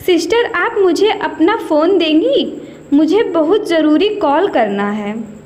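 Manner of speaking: ordinary delivery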